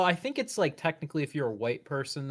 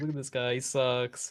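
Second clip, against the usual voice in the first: put-on mocking laughter. Imitating imagined onlookers pointing and laughing at someone: imitating people laughing mockingly. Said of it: "start laughing at him and pointing at him".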